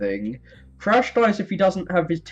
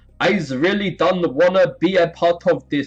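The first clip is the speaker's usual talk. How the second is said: muddled put-on Jamaican or Nigerian accent; 3 dB louder than usual. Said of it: "supposed to be Nigerian or something".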